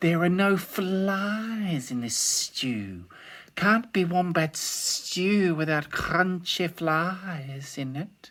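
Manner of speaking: high hissing lizard voice, "flies" stretched out. Narrator voicing the lizard answering Dingo: Blue Tongue's hissing voice. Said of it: "he hissed".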